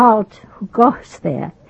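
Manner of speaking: imitated German accent. Retelling a guard-duty story where a soldier challenges an officer, german accent. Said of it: "But in with a German accent".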